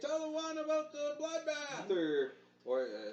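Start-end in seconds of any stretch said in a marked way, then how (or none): 0.0-1.9 very high shouted call. Voicing the crowd calling requests to a performer: shouted request. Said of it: "several requests being shouted out".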